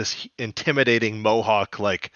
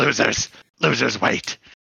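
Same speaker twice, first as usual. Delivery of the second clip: put-on angry villain voice. Retelling a movie villain's line during a sleeper hold: imitating an angry villain. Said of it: "he's, like, angry".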